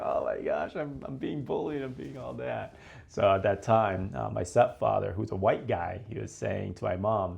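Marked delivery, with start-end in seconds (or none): 0.0-2.8 mock crying, tearful voice, words forced out. Recalling coming home from school after being teased: imitating own past crying. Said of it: "I was crying, like".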